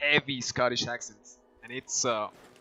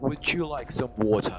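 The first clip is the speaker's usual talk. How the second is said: put-on British accent and pronunciation. Showing the only phrase they can pronounce the british way, imitated british accent. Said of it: "pronounce in the British way".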